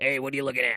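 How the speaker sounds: voice of a heckling club comedian. Picturing how the Goblin comedian would talk: imitating the Goblin comedian talking. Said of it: "that's how I picture him talking".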